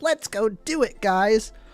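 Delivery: happy-go-lucky, slightly high-pitched, unhurried. Comparing game characters, imitating Tidus, happy-go-lucky.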